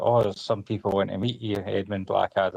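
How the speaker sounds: ordinary delivery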